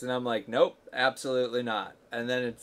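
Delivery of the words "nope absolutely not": plain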